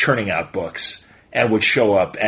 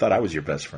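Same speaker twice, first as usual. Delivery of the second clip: put-on sad voice, lower and quieter; 7 semitones lower, 7 dB quieter than usual. Retelling a sitcom scene where Jerry looks all sad: imitating Jerry sounding sad. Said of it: "Jerry looks all sad".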